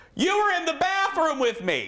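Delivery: put-on piercing, shrill, very high-pitched scream. Speaker retells a woman coming out of the bathroom: retelling a scream. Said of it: "she screams".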